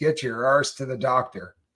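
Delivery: put-on nagging wife voice, scolding. Quoting what someone said to him, in a mock nagging wife voice. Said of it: "in my best nagging wife voice".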